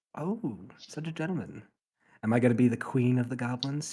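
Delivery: loud, drawn-out, jokey, gently teasing tone. Voicing a character teasing a helper in a game: joking tone. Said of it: "she says jokingly".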